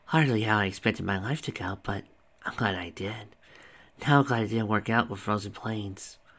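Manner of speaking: ordinary delivery, nothing marked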